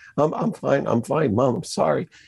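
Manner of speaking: tearful, crying voice. Retelling how they answered their mom, acting out crying. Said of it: "I'm just crying in front of her".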